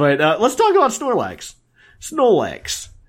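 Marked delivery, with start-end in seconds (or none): 2.0-2.9 Brooklyn accent, a little higher pitched. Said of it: "I can't say it without a Brooklyn accent now".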